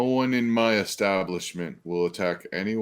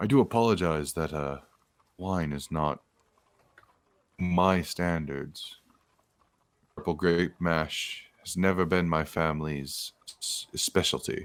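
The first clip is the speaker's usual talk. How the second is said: confidential, confiding, secretive tone. A man bringing the party a flagon of wine, speaking in a hushed tone. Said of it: "He goes into a hushed tone".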